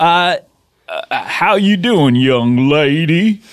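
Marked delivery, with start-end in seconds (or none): 1.2-3.3 very slow, put-on Southern Louisiana drawl. Greeting a pretend twelve-year-old girl while copying someone: put-on Louisiana accent. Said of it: "trying to do his accent ... some sort of like Louisiana accent".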